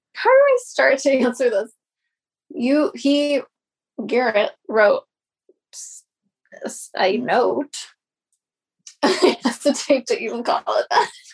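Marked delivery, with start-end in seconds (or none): 6.9-11.1 giggling and laughing while speaking. Answering how they found out about a note, giggling while talking. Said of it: "Why do you giggle as you say a note?".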